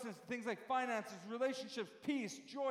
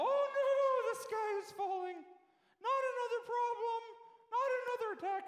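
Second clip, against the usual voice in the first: very high, frightened, panicky whine; 11 semitones higher, 4 dB louder than usual. Speaking about problems in life, acting out a fearful reaction, mock-panicky voice. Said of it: "I sound like I don't know who doing that, but it's the best voice I got".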